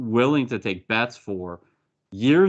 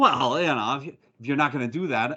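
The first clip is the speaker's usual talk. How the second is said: put-on old-time thirties tough-guy gangster voice. Imitating how a rough urban character talks: 1930s gangster voice. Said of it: "I'm doing it too much like a thirties gangster".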